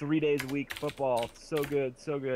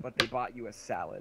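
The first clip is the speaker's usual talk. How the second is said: ordinary talk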